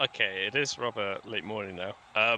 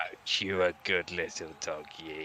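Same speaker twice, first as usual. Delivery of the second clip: put-on old lady voice, lower; 6 semitones lower, 4 dB quieter than usual. Player in character talking to a dog, old lady voice. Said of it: "you're gonna do old lady voice".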